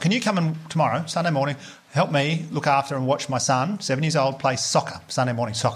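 ordinary delivery

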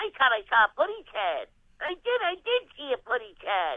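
high cartoon bird impression. Performer doing the Looney Tunes roll call, Tweety Bird voice. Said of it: "Tweety Bird".

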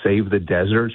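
ordinary delivery

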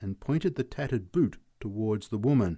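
ordinary delivery

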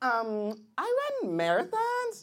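put-on sing-song girl voice.

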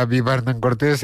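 ordinary talk, nothing marked

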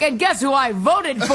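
usual speaking voice

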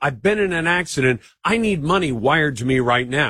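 put-on panicked child voice, pleading tone. Picturing a scam phone call in a child's voice: imitating a panicked child. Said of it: "you hear your child's voice, panicked".

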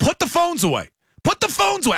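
acted yell, pitched very high, shrill and loud. Recalling yelling at the TV by himself last night, retelling his own yell. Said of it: "I was like yelling at the TV".

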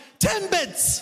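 very high, incredulous, bewildered voice.

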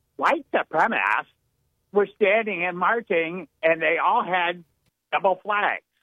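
put-on little-girl voice. Retelling what a woman said about the footage, imitating a little-girl voice. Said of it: "my little girl talk".

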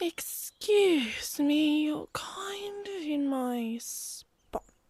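very high, purry little cat voice. Narrator reading a story voices an unseen speaker addressing the Yowie, purry voice. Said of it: "came a purry voice".

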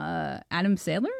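ordinary talk

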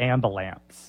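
put-on "ambulance" in heavy Southern accent. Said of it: "My mom has such a thick Southern accent".

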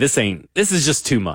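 plain

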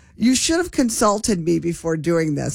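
ordinary delivery

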